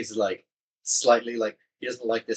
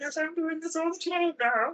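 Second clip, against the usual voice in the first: very high, cute little voice. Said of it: "what a cute voice".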